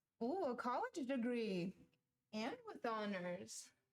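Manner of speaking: sounding genuinely surprised. Reacting to the other person's college degree with honors, surprised. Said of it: "Why did you sound so surprised?".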